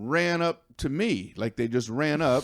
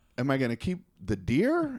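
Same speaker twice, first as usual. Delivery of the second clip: plain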